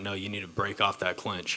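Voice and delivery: ordinary talk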